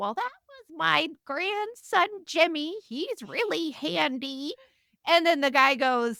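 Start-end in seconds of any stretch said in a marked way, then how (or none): 0.0-4.5 put-on high, slow, unhurried elderly woman's voice. Retelling a story where a man questions an old woman, voicing her in an old woman's voice. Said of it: "old woman's voice go like".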